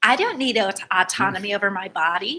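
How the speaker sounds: rough, attempted, sort-of Midwestern accent. Performing a comic bit, trying a sort of Midwestern accent. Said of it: "I'm trying to be a sort of Midwestern".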